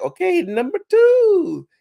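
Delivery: swooping, very high, loud cartoon Italian voice. Retelling a meeting with a voice actor who answered in his famous character voice, in an imitated cartoon plumber voice. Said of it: "he was doing the Mario voice like".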